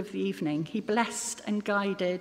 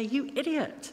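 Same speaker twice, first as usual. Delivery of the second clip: put-on, heated, angry scolding tone; 5 semitones higher than usual. Showing how someone shouts at a person stepping into the road: angry shout. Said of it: "We might shout and then say".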